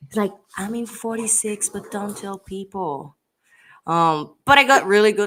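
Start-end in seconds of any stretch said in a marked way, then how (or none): 0.6-3.2 put-on soft whisper, higher pitched. Retelling how someone at an event whispered in their ear: imitating Charlie's soft whisper. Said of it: "very softly whispered in my ears".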